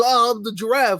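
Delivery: mocking impression of a giraffe character voice. Mocking the giraffe character by David Schwimmer: mocking David Schwimmer's giraffe. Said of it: "David Schwimmer's".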